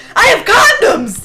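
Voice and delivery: acted-out screaming. Recalling a dating-simulator character's line, retelling a scream. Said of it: "you just scream that".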